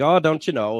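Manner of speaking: small-town Minnesota accent. Speaker imitating how people up in his area talk, in a Fargo accent. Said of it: "Fargo accent from that film Fargo".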